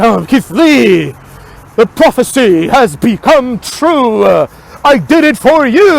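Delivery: mock pompous, self-important, grandiose, very slow delivery. Mocking someone who talks as if saying something super important: mock-grandiose, self-important. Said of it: "speaks as if he's saying something like super important and super intelligent".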